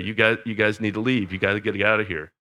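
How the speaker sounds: put-on cracking, breaking voice. Telling a story of a man slinking back into camp; imitating a cracked voice. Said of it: "in a cracked voice began to say".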